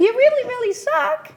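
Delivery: very high, squeaky voice. Turning a harsh inner critic into a Mickey Mouse voice. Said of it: "I turned it into a Mickey Mouse voice".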